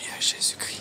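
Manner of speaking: soft, unvoiced whisper.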